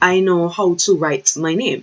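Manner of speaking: ordinary talk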